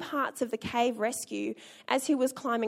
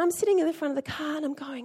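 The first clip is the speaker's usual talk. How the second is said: normal talking voice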